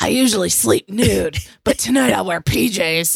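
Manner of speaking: put-on cartoonish puppet voice. Imitating a woman's line, turned cartoonish: Muppet-like cartoon voice. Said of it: "Like a Muppet version".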